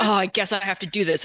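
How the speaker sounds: put-on raspy, rude, gruff growl. Imitating the book's grumpy hero offering to help: imitating a growly gruff man. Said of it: "very, like, growly".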